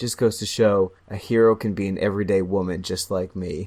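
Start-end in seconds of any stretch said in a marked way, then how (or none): none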